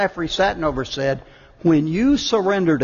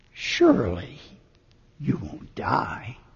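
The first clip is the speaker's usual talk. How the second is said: put-on whisper, quieter; 4 semitones lower, 6 dB quieter than usual. Retelling a story character's words, imitating a whisper. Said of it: "And he just whispers".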